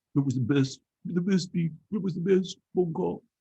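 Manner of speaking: stumbling put-on comedy voice. Mocking conspiracy claims with an Alec Baldwin's Donald Trump impression. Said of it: "my impersonation of Alec Baldwin impersonating Donald Trump".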